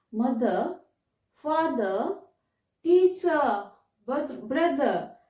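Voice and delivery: British accent, no final r sounds. Teaching learners how words sound in a British accent, British accent, silent R. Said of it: "साइलेंट करके ब्रिटिश एक्सेंट में".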